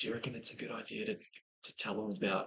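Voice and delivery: very quiet, hushed, secretive, conspiratorial whisper. A player's character asks a companion something in secret: whispering. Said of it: "I kind of whisper to Cersei".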